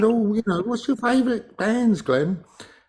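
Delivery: squeaky, very high, tipsy woman's chatter. Retelling what a woman at his local pub asked him, imitating Carol's high voice. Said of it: "who's got a very high voice when she's had a drink".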